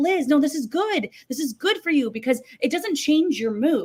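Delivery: loud yelling, called out. Acting out yelling at someone on the tv screen, retelling yelling at the tv. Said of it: "but I'm yelling at my T V screen".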